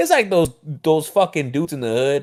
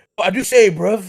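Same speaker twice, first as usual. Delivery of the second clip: exaggerated put-on English accent, slow, high, drawn out; 6 semitones higher, 4 dB louder than usual. Mocking how english people talk: put-on english accent. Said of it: "how do fucking English talk?".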